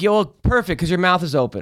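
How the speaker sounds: usual speaking voice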